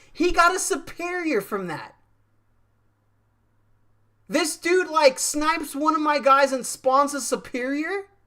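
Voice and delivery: angry. While gaming, complaining that an opponent spawned a superior, mad. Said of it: "I'm so mad right now".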